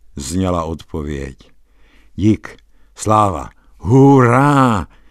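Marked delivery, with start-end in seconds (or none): 2.2-4.9 loud, jubilant joyful shout, hurá stretched out. Told the inn is right in front of him, the narrator shouts out. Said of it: "Vykřikl jsem".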